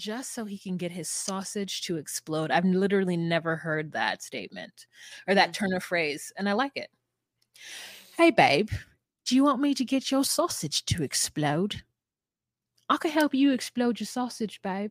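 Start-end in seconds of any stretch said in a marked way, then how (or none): 8.2-14.9 flirty, sweet-talking cockney wench accent. Riffing on a phrase the speaker had never heard, in a cockney wench voice. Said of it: "you just sound like, you know, a cockney wench".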